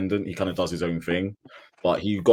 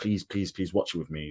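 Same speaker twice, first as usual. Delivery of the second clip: mock, repeated, earnest begging, pleading voice; 6 dB quieter than usual. Retelling how a brother asked to watch a fight together: imitating someone begging. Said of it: "he was, like, begging me".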